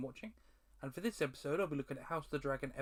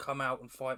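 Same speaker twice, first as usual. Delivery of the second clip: normal talking voice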